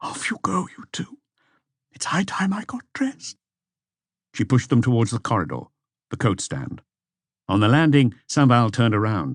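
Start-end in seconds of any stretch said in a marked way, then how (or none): 0.0-3.4 husky, breathy near-whisper. Reading a novel aloud, a woman sending two men off: husky voice. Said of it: "In a husky voice".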